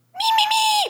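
very high, squeaky, wordless me-me sounds. Asked to do an impression on the spot, the speaker does a Beaker impression. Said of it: "Can we do an impression right now?".

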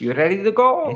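put-on Spanish accent, pitched very high. Riffing on how a plumber would sound, in a Spanish accent. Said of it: "You would have like a Spanish accent".

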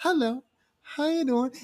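high, slow, corny delivery.

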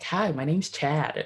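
clumsy, really bad fake American accent. Joking that the name Chad sounds American, the speaker does a really bad American accent. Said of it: "I'll do like a really bad American".

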